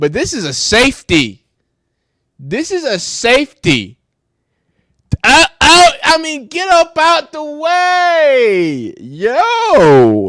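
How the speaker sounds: shrill, booming, slow swooping, very loud excited shout. Reacting to a football clip of a hard hit: yelling excitedly. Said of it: "I'm yelling in somebody's ear".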